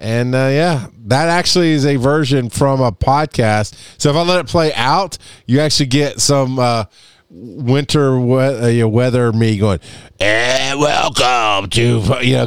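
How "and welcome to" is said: rumbling, growly show-intro voice. Imitating own old podcast intro line: growly voice. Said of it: "the growly voice".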